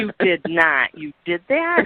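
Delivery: shocked, horrified sound. Retelling hearing the sons' old stories at dinner: imitating own horrified reaction. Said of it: "I was horrified".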